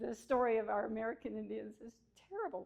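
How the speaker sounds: tearful, on the verge of tears. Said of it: "I'm gonna cry now".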